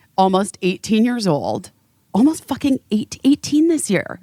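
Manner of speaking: tearful voice close to breaking into tears. Asking the other speaker about their nearly grown child, on the verge of tears. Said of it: "I'm going to cry".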